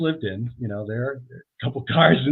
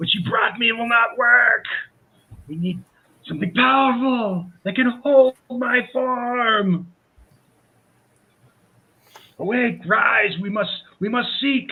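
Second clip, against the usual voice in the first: very high screaming yell, drawn out; 10 semitones higher than usual. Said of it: "she seems to be yelling at".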